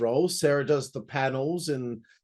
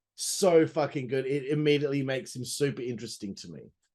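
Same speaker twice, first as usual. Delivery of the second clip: plain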